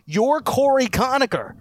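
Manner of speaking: shrill, very high-pitched scream. Retelling someone screaming at a player in practice: imitating someone screaming. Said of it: "just went over to him and screamed at him and said".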